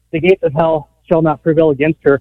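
usual speaking voice

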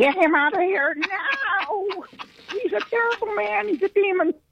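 church lady voice, pitched way up. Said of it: "the church lady voice".

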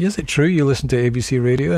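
normal talking voice

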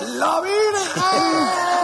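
mock ecstatic cry, very high, slow, drawn-out.

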